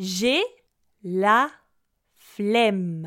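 unhurried, fairly slow, careful pace. Pronunciation lesson, first repetition of the phrase at a fairly slow pace. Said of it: "d'abord à une vitesse assez lente".

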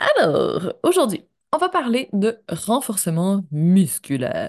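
low, wide-ranging dramatic voice.

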